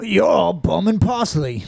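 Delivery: careful, deliberate, slow put-on British accent. Saying a quote for others to guess its meaning, put-on British accent. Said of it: "I'm gonna say the quote in a perfect British accent".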